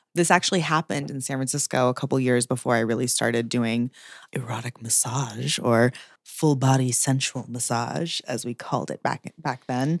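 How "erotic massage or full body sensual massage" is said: slow, whispered massage voice. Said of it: "I like your massage voice".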